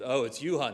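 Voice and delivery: put-on deep flat voice. Imitating a phone answerer who recognizes the caller: imitating a voice dropping an octave. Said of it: "their voice kinda drops an octave".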